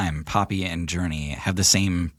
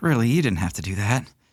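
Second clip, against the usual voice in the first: sheepish, slightly embarrassed, demurring tone; 4 semitones higher than usual. Describing a character as gold coins pile onto her palm, a little embarrassed. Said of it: "a little embarrassed".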